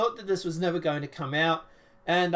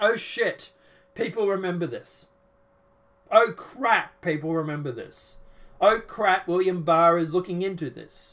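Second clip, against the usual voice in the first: usual speaking voice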